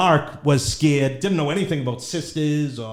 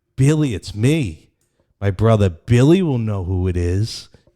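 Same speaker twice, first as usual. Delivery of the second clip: low, inhuman, mocking voice; 6 semitones lower than usual. Retelling a phone call, imitate the caller mocking his father in a non-human voice. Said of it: "And then she starts mocking my father".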